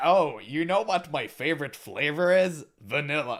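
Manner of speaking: mock patronizing, smug tone. Retelling how a developer revealed a re-release: imitating a patronizing tone. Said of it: "he pretended like".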